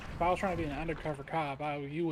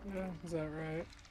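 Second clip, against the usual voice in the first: soft, uncertain, doubtful tone; 6 dB quieter than usual. Answering someone who says he's glad they're friends, unsure. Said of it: "Why do you sound so unsure".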